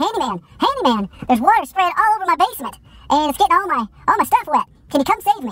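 put-on very high, trembling, hysterical, quivering panic. Retelling an early call from a man in hysterics, imitating a quivering, panicked voice. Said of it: "His voice was quivering".

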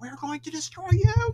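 shrill, sped-up, excited robotic scream. Explaining how Daleks normally sound, the speaker acts out an example: screaming Dalek voice. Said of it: "they can scream and they speed up their talking when they're very excited".

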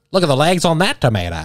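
transatlantic accent with wide pitch range.

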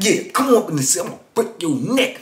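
mock savage, vicious, menacing voice. Retelling how a cellmate threatened others: imitating a vicious threat.

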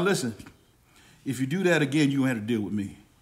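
voice dropped as low as possible. Acting out a warning to a young grandchild, as deep as possible. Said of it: "With the most bass I can have in my voice".

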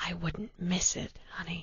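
very quiet, soft, hushed whisper. She replies into his ear, whispered. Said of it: "she whispered into his ear".

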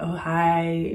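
mock flirty delivery. Retelling how a guy outside greeted them: imitating a flirty greeting. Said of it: "trying to be flirty".

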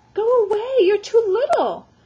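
very high, loud cry through chattering teeth. Dripping wet, riding away from his clutching relatives: through chattering teeth. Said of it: "Ralph said through chattering teeth".

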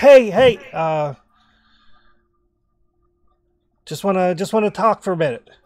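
very loud, high-pitched shout. Voicing a character calling out from a hundred yards away: shouting loudly. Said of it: "he, like, shouts loudly".

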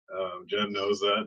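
ordinary talk

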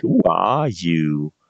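snotty, obnoxious taunting voice. The captor Whelm mimics the party's question, in Whelm's obnoxious mocking voice. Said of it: "mimicking you in an obnoxious voice".

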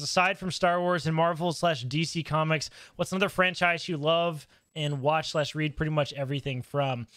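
normal talking voice

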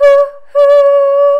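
high, loud train whistle hoot. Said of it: "what makes this sound?".

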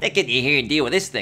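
put-on light nasal voice. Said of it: "It's so light and nasal".

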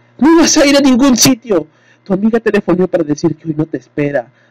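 furious, enraged yell, pitched very high, shrill. Connie, hands on hips, turns on her husband Carlo; shouted furiously. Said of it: "Connie gritó a su marido".

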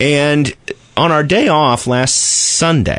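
voice breaking mid-phrase, words drawn out. Starting a story about a day off, voice cracking. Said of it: "did you hear my voice crack just there".

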